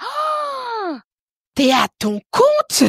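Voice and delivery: acted very high, very slow yell, oh stretched. Retelling a past conversation about work: imitating someone shouting. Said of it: "Pourquoi tu cries ?".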